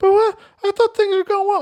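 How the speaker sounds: put-on very high, loud, tipsy, bewildered drunk female voice. Retelling a wrong-number call, imitating a drunk girl. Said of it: "this obvious fucking drunk girl".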